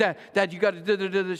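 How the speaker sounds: put-on desperate, frantic pleading, losing composure. A father retells his daughter's phone call, imitating daughter's frantic plea. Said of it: "And she's frantic".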